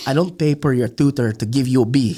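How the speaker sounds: put-on Filipino accent. A speaker quotes their mom's scolding, imitating mom's Filipino accent. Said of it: "That's her Filipino accent".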